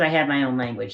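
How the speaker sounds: ordinary delivery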